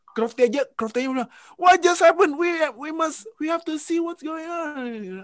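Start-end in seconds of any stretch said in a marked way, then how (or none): 1.5-5.2 put-on agitated commentator voice, much higher pitch. Recalling watching the race with friends, imitating agitated Crofty commentary. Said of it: "emosinya udah di atas".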